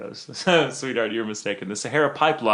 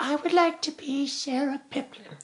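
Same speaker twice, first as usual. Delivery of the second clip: put-on withered little old lady voice; 4 dB quieter than usual. Telling a joke, voicing a stooped old woman answering a question, in an old woman voice. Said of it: "that's my old woman voice".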